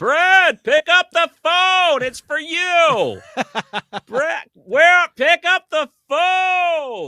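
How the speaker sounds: very high, very slow, drawn-out holler. Reminiscing about family calling someone to the phone, retelling a yell from another room. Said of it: "yell from another room".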